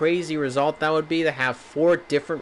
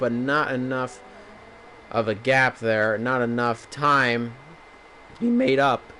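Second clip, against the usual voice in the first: voice cracking mid-phrase, slow and halting; 3 semitones lower than usual. Race commentator calling the action, voice cracking. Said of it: "A little bit of a voice crack".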